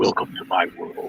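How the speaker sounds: breathy, whispered masked vigilante voice. Retelling a line said while shaking hands for a photo: Batman voice. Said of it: "Batman just like".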